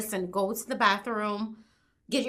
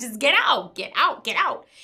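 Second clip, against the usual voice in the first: all-out loud, repeated screaming; 3 semitones higher, 6 dB louder than usual. Retelling screaming at a man who would not leave the bathroom: retelling a scream. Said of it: "I was screaming at him".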